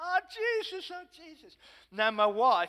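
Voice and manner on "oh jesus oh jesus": screaming and shouting, very high-pitched, shrill. Speaker retelling how a man he prayed for jumped up, retelling a man shouting. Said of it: "he starts shouting and screaming".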